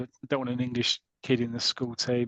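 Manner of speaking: normal talking voice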